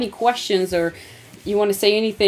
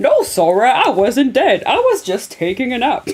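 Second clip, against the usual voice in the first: loud, slow cartoon voice, stretched out, wide swooping pitch; 4 semitones higher, 6 dB louder than usual. Quoting what Goofy says after waking up: Goofy voice. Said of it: "He's like".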